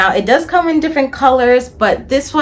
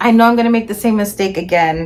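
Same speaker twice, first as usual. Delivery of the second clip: ordinary talk, nothing marked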